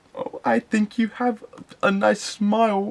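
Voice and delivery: weak, feeble stammer. Recalling a horror situation, the speaker replays his words to her: retelling a weak stutter. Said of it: "weakly able to stutter out the words".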